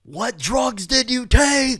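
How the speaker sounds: very loud, very high, shrill full-volume screaming. Retelling being questioned in a hallway chair after drinking, imitating a cop screaming. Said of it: "I remember a cop screaming in my face".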